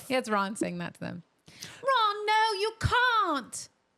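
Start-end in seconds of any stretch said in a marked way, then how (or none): 1.8-3.7 put-on prim English girl voice, very high, stretched out. Doing her best Hermione, telling Ron he can't, in a Hermione impression. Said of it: "That was pretty good".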